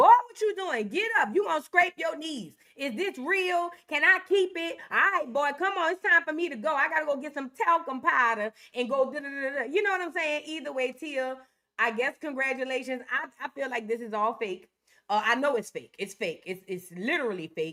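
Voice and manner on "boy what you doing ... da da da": loud, put-on old woman granny voice. Imitating Tia reacting to a proposal: put-on old granny voice. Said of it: "Tia sound like somebody's granny".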